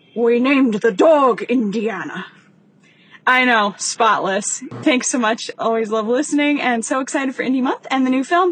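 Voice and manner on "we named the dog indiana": put-on Scottish-accented voice. Sending in a movie quote, doing a Sean Connery impression. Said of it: "doing my best Sean Connery impression".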